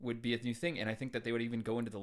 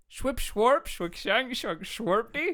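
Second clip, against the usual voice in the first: put-on mock-Swedish gibberish voice; 12 semitones higher, 10 dB louder than usual. Signing off the show with gibberish, in a Swedish Chef voice. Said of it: "It's like the Swedish chef".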